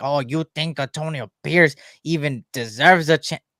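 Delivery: put-on derisive, mocking voice. Imitating people who will call the speaker crazy: imitating a mocking critic voice. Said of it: "I can't do that voice again".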